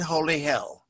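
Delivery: normal talking voice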